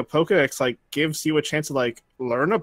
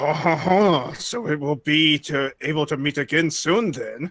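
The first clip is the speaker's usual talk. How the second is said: clumsy, bad French accent. Asked to voice a plot-centric character in their best french accent, attempting it. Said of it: "Voice this plot centric character with your best French accent".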